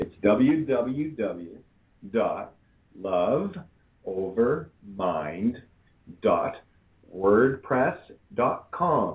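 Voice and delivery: very slow, halting, broken into pieces. Spelling out a website address for listeners to replay, really slow. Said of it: "I'm going to say it really slow".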